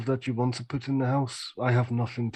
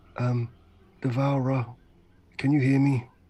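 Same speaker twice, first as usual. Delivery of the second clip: hushed whispering voice. Speaking in character behind a tree, calling to the Devourer: whispering. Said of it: "I'm gonna whisper and just say".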